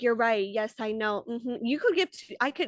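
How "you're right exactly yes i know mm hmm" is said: mock patronizing, condescending tone. Retelling how Rachel answered Ariana, imitating a patronizing reply. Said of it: "You're patronizing me by being like".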